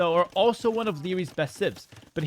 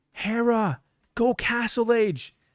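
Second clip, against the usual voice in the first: put-on devil whisper, higher; 4 semitones higher than usual. Retelling how the devil whispered a game choice: imitating a whispering devil. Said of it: "the devil whispered to me".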